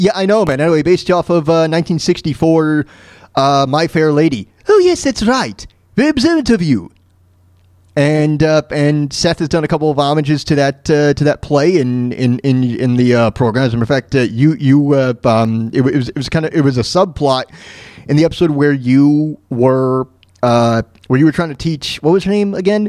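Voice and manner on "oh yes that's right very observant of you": put-on high-pitched, posh, upper-class British accent. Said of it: "Well, Stewie".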